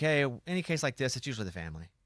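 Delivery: ordinary talk, nothing marked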